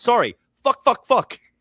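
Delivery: high, loud broken English, blurted out. Retelling a tennis player's interview reply: imitating broken english. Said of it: "in broken English".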